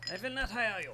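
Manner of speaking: odd put-on German accent, loud and high. Retelling what you once said, in a strange German accent. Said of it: "I said in strange German accent".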